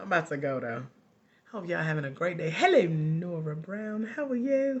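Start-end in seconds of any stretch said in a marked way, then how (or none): 2.5-4.8 slow, put-on British accent. Greeting someone in the audience by name, in a british accent. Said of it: "I'll do my greetings in my British accent".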